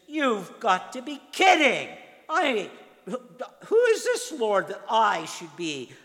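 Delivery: high, loud, incredulous, scornful, defiant tone.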